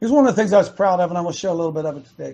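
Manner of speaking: fast, rushed talk. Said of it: "I'm talking fast today".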